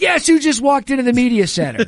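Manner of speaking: loud, high excited shouting.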